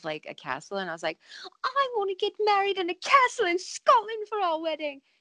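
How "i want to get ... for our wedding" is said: put-on squeaky, very high-pitched character voice. Retelling asking her fiancé to marry in a castle: Veruca Salt voice. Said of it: "he thinks it's funny when I talk like Veruca Salt".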